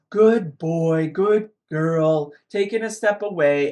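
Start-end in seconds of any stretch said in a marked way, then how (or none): 0.1-2.3 deep voice, slow and drawn out. Showing how to give praise that teaches: deeper voice. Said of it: "I am using that deeper voice".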